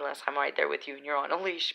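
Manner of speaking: usual speaking voice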